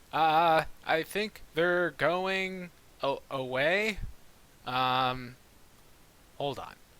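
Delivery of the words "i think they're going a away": very confused, hesitant, bewildered, high and slow. Playing a character's line in a very confused voice. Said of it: "in a very confused voice".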